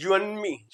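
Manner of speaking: and shortened, you and me stressed. Teaching English sentence stress, reduced and, stressed you and me. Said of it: "एंड को तो कर देगा छोटा ... ये यू और मी को स्ट्रेस देगा".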